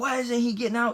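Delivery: mock high, demanding cop yell. Retelling a police stop, imitating the cop demanding answers: imitating a cop yelling. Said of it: "The cop's yelling at me now".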